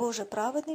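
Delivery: plain reading voice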